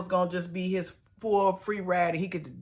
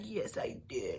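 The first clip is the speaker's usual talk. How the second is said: put-on whispery, hushed, breathy little-kid voice; 4 semitones higher, 8 dB quieter than usual. Retelling how a grown man answered his partner in a childish voice. imitating a little kid's voice. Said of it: "Tony talked like a little kid".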